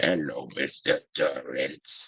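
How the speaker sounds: very low, hushed, weird little voice. Describing how she sounded, like in The Shining: Tony voice. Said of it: "does his little voice of Tony... Like that's what her voice sounded like".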